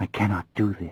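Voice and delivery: very low, quiet, uncertain, hesitant voice. Reading a scene where a companion refuses to help: very low uncertain voice. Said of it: "In a very low and uncertain voice".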